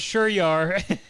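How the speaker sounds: put-on mocking laughter. Retelling a friend's reply to a woman: imitating someone laughing in her face. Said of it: "he starts laughing in her face".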